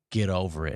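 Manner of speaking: put-on authoritative, no-nonsense, stern, demanding parent voice. Showing how one answers someone feeling sorry for themselves: demanding parent voice. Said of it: "it's really easy to be like".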